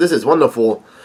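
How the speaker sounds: ordinary delivery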